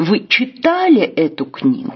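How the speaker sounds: heavy stress on читали with a falling tune.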